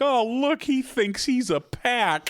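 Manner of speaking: high, slow, delighted cooing.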